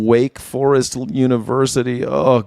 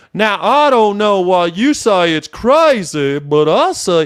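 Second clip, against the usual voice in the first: put-on slow, drawn-out Texan accent with higher pitch; 7 semitones higher than usual. Showing how Texans sound, like Mister Phil: Texan accent like Mister Phil. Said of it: "Texans sound like Mister Phil".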